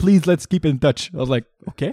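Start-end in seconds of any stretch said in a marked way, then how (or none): 0.0-1.1 put-on French accent on English. Quoting what a man told the speaker, in a French accent. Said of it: "sounded like he wrote with like a French accent".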